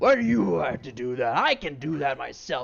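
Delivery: very loud goblin character voice. Storyteller voices a goblin questioning the bookkeeper's plan, goblin voice. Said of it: "the goblin goes".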